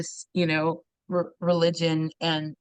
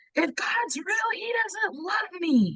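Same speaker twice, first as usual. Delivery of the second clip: very high, mock screaming outburst; 13 semitones higher than usual. Retelling arriving at church with mom: retelling screaming at mom. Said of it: "screaming to my mom".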